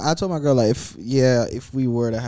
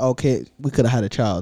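ordinary delivery

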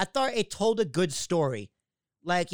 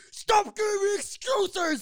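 put-on screaming, very high, slow and drawn out; 13 semitones higher than usual. Retelling a wrestling show, imitating Roman Reigns screaming: imitating Roman Reigns screaming. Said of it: "Roman Reigns just screaming at them".

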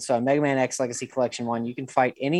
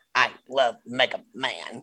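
put-on childlike voice with odd, weird line delivery. Recalling a commercial kid's line: imitating a kid's weird delivery. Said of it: "I remember that one crystal clear".

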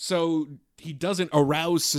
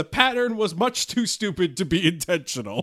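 ordinary delivery

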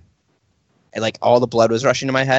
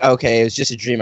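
ordinary talk, nothing marked

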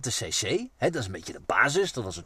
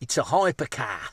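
put-on Australian accent. Imitating how Supercar Blondie would call a car a hypercar: Supercar Blondie Australian accent. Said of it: "Met een Australisch accent".

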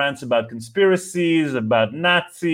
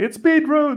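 very high, loud, mock shouted voice; 13 semitones higher than usual. Recounting how others answered the speaker's morning screaming, retelling a yell. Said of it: "they just yelled back".

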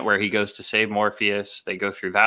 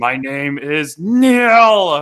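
put-on grunt, louder; 6 semitones higher, 6 dB louder than usual. Speaker retelling a movie line she always mishears, grunting like Neo. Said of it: "he grunts".

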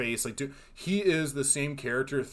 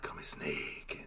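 character voice, much lower pitch and quieter; 10 semitones lower, 11 dB quieter than usual. Describing an actor's hammy character roles, the speaker does a Snake Plissken voice. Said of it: "like doing that voice".

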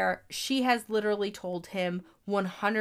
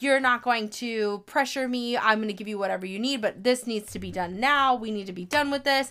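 mock angry yelling. Retelling a film scene where a character yells: imitating Marta yelling. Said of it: "she's yelling like".

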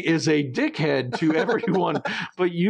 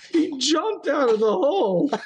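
very high-pitched, words broken up by laughing; 9 semitones higher than usual. Speaker retells a story, laughing while talking. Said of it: "let me wipe my tears out of my eyes".

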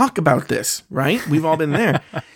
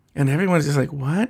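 normal talking voice

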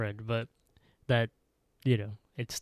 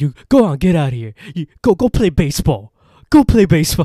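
put-on angry old man voice, higher and louder; 6 semitones higher, 17 dB louder than usual. Retelling a scene from an episode, impression of an angry old man. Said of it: "What an impression".

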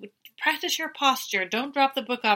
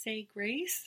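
very sweet mock tone, quieter; 11 dB quieter than usual. Retelling a table-manners class, speaker voices Colton's answer to the instructor: imitating Colton very sweetly. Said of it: "very sweetly says".

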